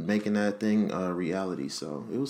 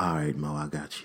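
lower-pitched put-on cool voice; 5 semitones lower than usual. Imagining Michael B. Jordan as the voice of Alexa: Michael B. Jordan cool voice. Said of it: "He gonna be like".

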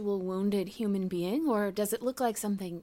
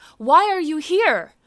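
very loud, raised, intimidating voice; 7 semitones higher, 12 dB louder than usual. A player character in a twisted chapel, confronting the thing, in a raised, intimidating voice. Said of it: "I raise my voice a little, maybe trying to sound intimidating".

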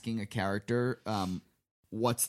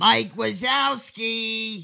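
very high, booming, squealing creature voice; 11 semitones higher, 8 dB louder than usual. Doing an impression of the worm monster in Monsters, Inc. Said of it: "Is that a good impression?".

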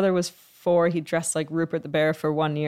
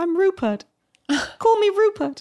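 put-on very high, small British accent; 3 dB louder than usual. Recalling how he talked as a small child, a little British accent. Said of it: "he had a little British accent. He'd go".

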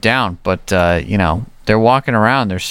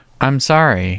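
calm put-on voice, pitched much higher; 4 semitones higher than usual. Retelling Walker apologizing to Trivette, calm Walker voice. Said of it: "in the calm Walker voice".

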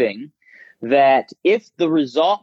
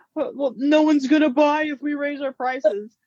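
high, timid doubtful voice. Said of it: "Mooch and Melissa said".

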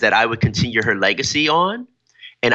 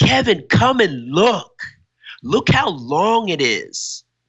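put-on child's voice calling out loudly; 7 semitones higher than usual. Retelling how a boy yelled to come see his bike skid: imitating a boy yelling. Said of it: "he stops and he yells".

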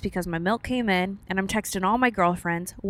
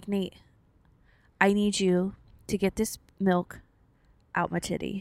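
put-on, tearful crying with a pleading tone; 3 dB quieter than usual. Retelling an earlier desperate moment, imitating own crying plea. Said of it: "I start crying".

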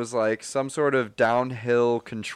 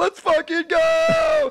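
very high pumped-up yell, "go" stretched out; 4 dB louder than usual. Retelling banging the steering wheel while driving: retelling a hyped-up shout. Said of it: "I was so hype".

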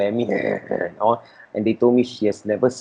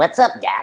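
zany cartoon character voice, very high; 10 semitones higher than usual. Recalling getting a voice approved to play Looney Tunes characters: Looney Tunes cartoon voice. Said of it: "the official voice of Looney Tunes".

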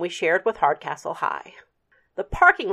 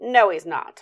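scoffing, dismissive tone. Daniel Nussbaum dismisses the narrator's worry that he is coming back, scoffing. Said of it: "scoffed the other Daniel".

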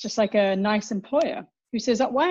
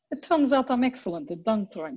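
well-known put-on, character-style Russian accent. Repeating a favourite line from the last episode, in a Villanelle Russian accent. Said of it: "Using your famous Villanelle Russian accent".

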